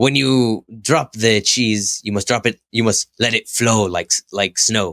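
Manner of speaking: put-on Mexican accent, best attempt. Retelling a commercial narrator voicing a chef's inner thoughts, Mexican accent. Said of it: "when you do my best Mexican accent".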